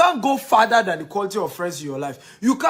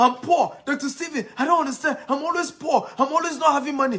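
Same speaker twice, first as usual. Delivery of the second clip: loud raised voice, shouting; 6 semitones higher than usual. Acting out a listener complaining to Doctor Stephen: imitating someone shouting a complaint. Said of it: "So you are shouting".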